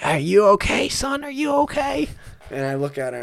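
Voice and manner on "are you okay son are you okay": put-on shrill, very high, rising old lady yelling voice. Retelling a crash, an old lady asking if he's okay: imitating an old lady yelling. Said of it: "old lady's yelling at me".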